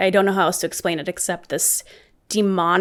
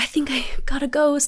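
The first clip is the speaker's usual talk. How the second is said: high-pitched, thrilled, all-excited exclamation; 7 semitones higher than usual. Walking back after catching something, the speaker imitates an excited friend. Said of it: "She's all excited because she's like".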